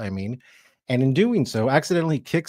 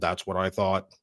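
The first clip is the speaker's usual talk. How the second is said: robotic voice, lower and quieter; 4 semitones lower, 4 dB quieter than usual. Telling a co-speaker how it should have responded, in old Cylon voice. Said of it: "in that old Cylon voice from the original series".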